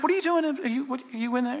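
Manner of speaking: slightly condescending. Retelling how the call center boss spoke to a coworker: imitating a condescending tone. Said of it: "a little bit condescending".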